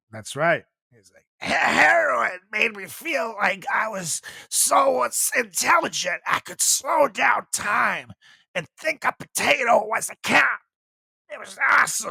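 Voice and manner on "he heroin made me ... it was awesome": put-on raspy politician voice, pitched higher. Mocking a politician's claim about heroin: RFK Jr. impression. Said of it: "I think that's my favorite impression now".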